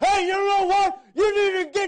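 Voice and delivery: very loud, full-blast, high-pitched yelling. Showing how god would sound if he yelled: mock yelling. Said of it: "God doesn't yell. He's not a yeller".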